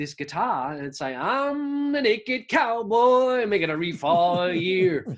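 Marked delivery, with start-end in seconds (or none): 1.1-5.1 bad put-on American accent, very high, slow, drawn-out "I'm". Quoting the Naked Cowboy playing his guitar, in a bad American accent. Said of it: "That's a terrible American accent".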